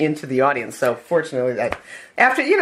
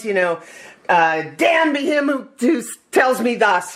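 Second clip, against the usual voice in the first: put-on screaming voice, much higher pitch; 7 semitones higher than usual. An actor recalls a stage fight scene and re-enacts his lines: retelling screamed lines. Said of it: "and I'm screaming these lines".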